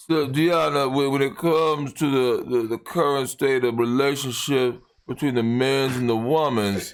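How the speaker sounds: put-on slurred, drunk-sounding speech. Mimicking a drunk man talking to his guest: imitating a slurred drunk voice. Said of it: "slurred voice".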